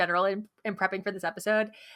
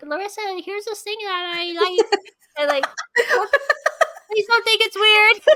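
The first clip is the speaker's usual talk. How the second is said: put-on very high, very loud little kid voice; 11 semitones higher, 8 dB louder than usual. Retelling how they share the things they like, in a little kid voice. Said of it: "You like your little kid voice".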